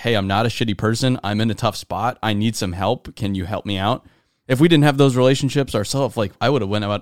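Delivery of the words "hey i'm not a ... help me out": normal talking voice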